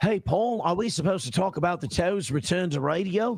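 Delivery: put-on British accent that sounds almost Australian. Trying out accents while addressing a high-school acquaintance, in an attempted british accent. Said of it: "my Australian and my British are very similar".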